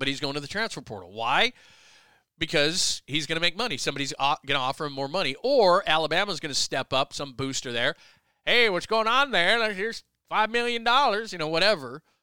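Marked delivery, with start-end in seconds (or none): 8.5-12.0 clumsy, bad put-on Alabama accent. Discussing a player entering the transfer portal, voicing an Alabama booster: bad Alabama booster impression. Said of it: "That's a bad Alabama impression of a booster".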